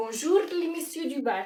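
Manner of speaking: attempted Russian accent that comes out sounding Moroccan. Video host trying out a russian accent, which comes out sounding moroccan. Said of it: "ça c'est marocain".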